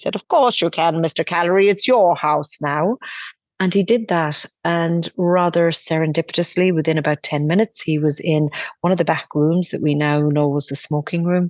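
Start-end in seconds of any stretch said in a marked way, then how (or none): 0.1-3.0 put-on Anglo-Irish accent. Retelling a woman's reply to Dad, in her strong Anglo-Irish accent. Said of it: "in her strong Anglo-Irish accent".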